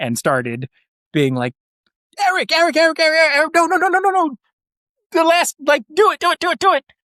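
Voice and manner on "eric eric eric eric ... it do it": play-acted very high, loud, frantic screaming, losing control. Retelling screaming from a platform for someone to look around: imitating someone screaming. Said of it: "I'm screaming your number".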